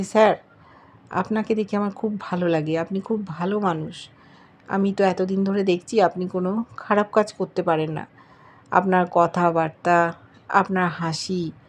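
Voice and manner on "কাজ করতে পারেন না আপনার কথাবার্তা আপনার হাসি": ordinary delivery, nothing marked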